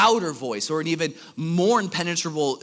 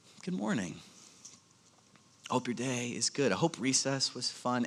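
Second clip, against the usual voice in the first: soft, quiet voice; 3 semitones lower, 9 dB quieter than usual. Retelling how a teacher greeted a noisy class: imitating a teacher speaking softly. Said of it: "she would just softly say".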